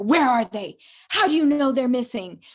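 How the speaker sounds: aggressive, grilling, loud, high-pitched, violent tone. Retelling what a man said after grabbing the speaker: imitating a violent demand. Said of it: "like very violent".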